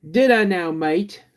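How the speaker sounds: Australian accent, very high-pitched and loud. Replying to a read-out comment about sounding australian, australian accent. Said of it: "You sounded a bit Australian".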